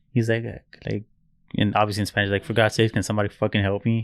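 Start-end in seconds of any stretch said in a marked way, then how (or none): none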